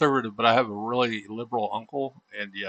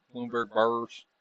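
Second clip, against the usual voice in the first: American country drawl, quieter; 5 dB quieter than usual. Repeating a team name jokingly: country accent. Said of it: "I can't even say that without a country accent".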